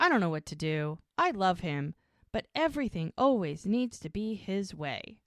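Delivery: ordinary delivery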